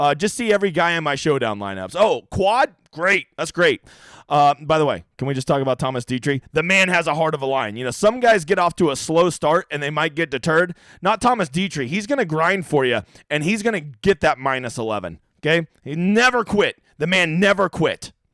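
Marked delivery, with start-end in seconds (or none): none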